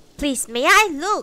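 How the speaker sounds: put-on very loud, high-pitched, angry boy's voice. Narrator reads the tabby boy's request to look, angry. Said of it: "The tabby boy said in an angry voice".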